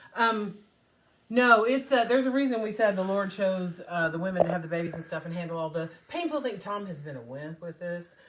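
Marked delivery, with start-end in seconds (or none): 1.2-3.8 louder, strained, raised voice. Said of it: "I'll try and yell".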